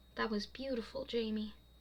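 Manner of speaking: ordinary talk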